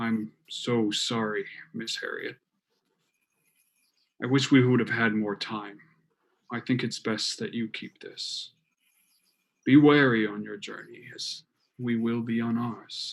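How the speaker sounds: hushed, soft, quiet, under the breath. Voicing a character speaking to a freshly dug grave: speaking quietly. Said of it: "he says quietly to the freshly turned earth".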